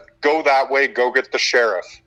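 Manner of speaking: normal talking voice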